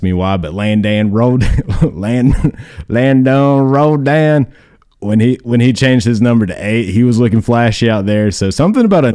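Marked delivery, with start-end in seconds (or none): 0.4-4.5 exaggerated country accent, pitched higher. Saying a player's name the usual way: extra country accent. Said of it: "I say it like extra country".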